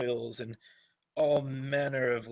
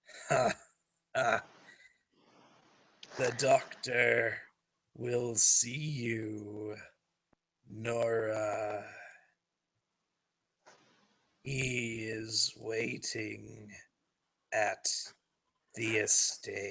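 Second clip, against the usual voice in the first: croaking corpse voice with drawn-out "you". Narrator voices a corpse shambling up to speak, croaking corpse voice. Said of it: "with his sort of disjointed head just croaks out".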